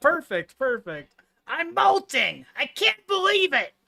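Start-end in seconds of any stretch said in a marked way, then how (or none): 1.5-3.7 strained, straining put-on voice, much higher. Speaker tries a voice they needed to warm up for, strained put-on voice. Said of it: "It sounded good".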